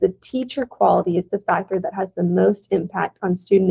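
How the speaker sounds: plain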